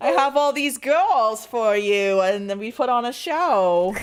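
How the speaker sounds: very loud, high, stretched put-on Jersey accent. Voicing an invented cougar character: put-on Jersey accent. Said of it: "she has a Jersey accent".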